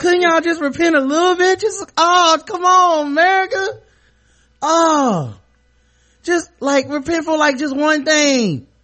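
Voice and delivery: very high, very loud, shrill, whiny preacher pleading. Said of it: "Could this dude sound any more whiny".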